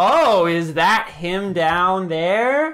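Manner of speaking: utterly unconvincing, blatantly fake acted delivery. A dwarf character on a balcony calls out, in the most unconvincing tone ever. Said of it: "says in the most unconvincing tone ever".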